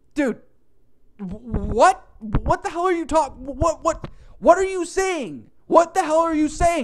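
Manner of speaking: play-acted loud, high-pitched screamed stammering, stretched "what". Retelling yelling at a drive-thru speaker: retelling a scream. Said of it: "I'm screaming this out".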